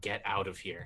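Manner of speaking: growled delivery. Ordering another character away in the middle of a fight: growled line. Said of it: "growl at him".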